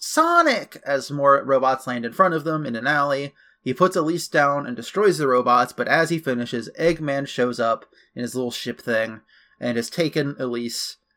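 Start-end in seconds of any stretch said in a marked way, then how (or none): 0.0-0.8 very high, calling yell. Retelling a game cutscene as robots land in an alley: imitating Elise yelling. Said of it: "Elise yells".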